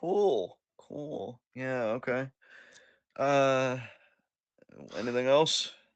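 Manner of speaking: slow, weary, dead-inside, ready-to-be-done tone. Responding to another speaker's updates, sounding dead inside, ready to be done. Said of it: "You sound so dead inside".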